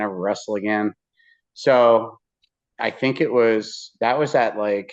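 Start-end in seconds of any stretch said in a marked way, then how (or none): none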